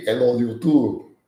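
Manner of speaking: put-on French accent. Imitating a YouTuber opening a video: put-on French accent. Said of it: "with my courageous French accent".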